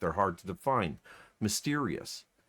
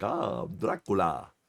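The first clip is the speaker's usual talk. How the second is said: put-on speech without front teeth; 2 semitones lower than usual. Showing how someone missing front teeth talks, imitating toothless speech. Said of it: "when he talks or anything like that, he's like".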